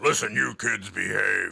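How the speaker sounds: firm motherly tone, loud and slow. Imitating a mother scolding the kids: imitating mother's deeper voice. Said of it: "had a deeper voice than I did".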